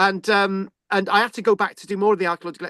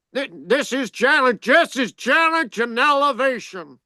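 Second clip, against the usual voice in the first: put-on American accent; 5 semitones higher than usual. Asked by a friend to say a quote, trying an American accent. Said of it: "let's try and get into an American accent".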